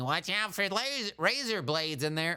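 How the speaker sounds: mock, high-pitched, screamed parental yell. Retelling parents warning about Halloween candy: imitating parents screaming. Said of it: "our parents in the background screaming".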